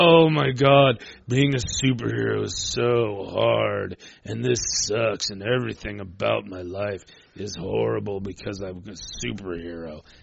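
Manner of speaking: put-on, slow, drawn-out, mopey emo self-pitying whine. Mocking how Spider-Man acted in the old movies: mopey emo Tobey Maguire Spider-Man imitation. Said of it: "He got real emo about it".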